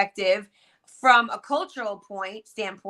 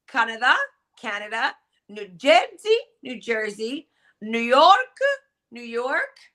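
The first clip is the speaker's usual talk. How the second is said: put-on perfect, spot-on Italian accent. Imitating relatives in Sicily, in an Italian accent. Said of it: "perfect Italian accent".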